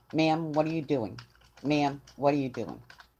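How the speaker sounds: ordinary delivery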